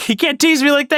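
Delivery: put-on high-pitched scream. Telling a friend about a game partner's reaction when you walked away, retell his complaint as a scream. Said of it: "and he's like screaming it".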